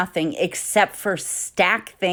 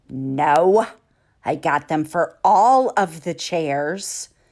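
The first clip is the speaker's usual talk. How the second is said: mock sassiest voice, full of attitude, drawn-out no; 2 semitones lower than usual. Retelling her reply to her husband about chair covers: imitating her own sassy voice. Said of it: "in probably my sassiest voice that I have".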